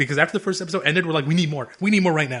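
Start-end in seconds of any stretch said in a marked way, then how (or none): none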